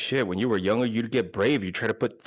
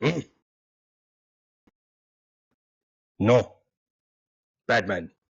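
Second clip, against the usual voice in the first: drawn-out, very slow grunting cavewoman voice; 3 dB louder than usual. Acting out a woman's reaction as she pulls away, imitating cave-woman grunting. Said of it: "grunting like like fucking cave women".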